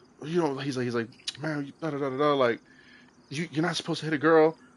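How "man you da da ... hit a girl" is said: aggrieved, offended, upset tone. Retelling an argument about a story, imitating Dylan getting upset. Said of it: "mad booty hurt and was just like".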